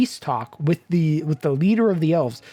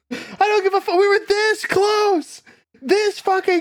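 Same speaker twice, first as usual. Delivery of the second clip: mock enraged, furious shriek, very high-pitched. Retelling how he reacts to Jaina, imitating furious yelling. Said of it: "he gets he gets so pissed".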